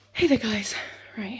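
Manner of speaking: panting, winded, huffing, out of breath. Greeting viewers just after coming up the stairs, out of breath. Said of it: "excuse me huffing and puffing".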